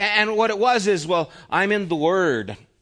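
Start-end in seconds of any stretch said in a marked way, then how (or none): 1.5-2.6 mock lofty, condescending, superior talking-down delivery. Quoting a man who talked down to his wife: mock-condescending tone. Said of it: "And he would say it like that".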